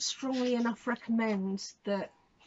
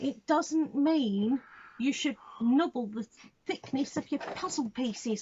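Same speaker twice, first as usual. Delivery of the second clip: put-on stern, scolding voice; 3 semitones higher than usual. Reviewing a licensed puzzle, the speaker addresses its makers directly: mock-stern voice. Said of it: "put my stern voice and pointy finger out".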